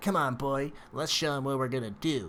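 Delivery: mocking, teasing, taunting tone. A game narrator voices a floating green creature urging on its companion, in a mocking tone. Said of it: "almost in a mocking tone".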